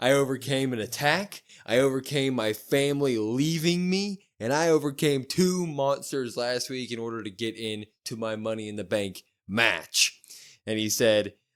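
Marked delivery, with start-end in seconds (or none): none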